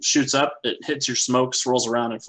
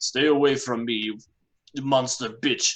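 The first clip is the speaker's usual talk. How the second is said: slow, put-on Russian accent. Voicing a fleeing character who yells back at a pursuer: Russian accent. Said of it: "He picked up an accent".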